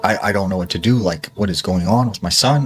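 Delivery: put-on panicked, frantic voice. Retelling a story, quoting the mother about her son: imitating a panicking mother. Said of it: "she's just panicking".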